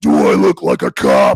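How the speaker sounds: very deep, loud, booming superhero voice. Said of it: "that whole voice".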